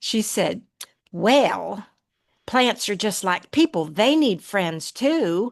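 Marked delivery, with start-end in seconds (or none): 1.1-5.5 put-on Kentucky southern accent. Speaker recalling what grandmother said in Kentucky: Kentucky southern accent. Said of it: "very kind of southern accent ... I can imitate it really good".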